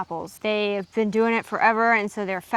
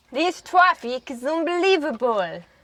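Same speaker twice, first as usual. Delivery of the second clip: bad, unconvincing put-on Russian accent, pitched up; 5 semitones higher than usual. Someone commented asking for the accent, so try the traffic line in a bad russian accent. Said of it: "The Russian accent".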